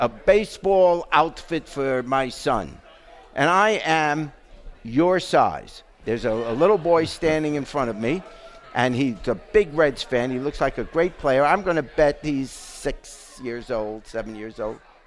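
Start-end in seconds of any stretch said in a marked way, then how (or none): 0.0-2.8 put-on heavy German accent. Retelling a refugee woman asking in a department store, thick German accent. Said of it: "in a thick accent".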